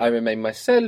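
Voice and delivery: ordinary talk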